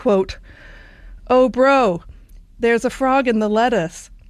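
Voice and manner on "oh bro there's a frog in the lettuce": put-on called out in an Australian accent. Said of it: "I'm gonna do this in my best Australian accent here".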